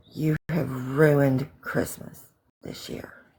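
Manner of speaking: quiet, low growling. Recalling a man leaning down over the speaker in bed, retelling a growl. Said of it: "he growled at me".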